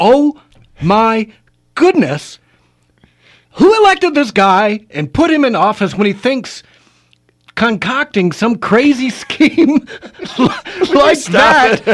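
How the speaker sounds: high-pitched, laughing through the words. Speaker recounting their reaction to an elected official's scheme, laughing while talking. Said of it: "I'm laughing".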